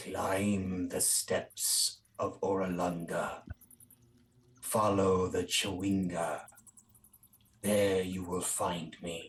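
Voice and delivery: put-on eerie, haunting, old feminine half-whisper. Game master voicing a half-whisper a player hears near a statue, haunting old feminine half-whisper. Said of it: "you hear a haunting whisper in your head".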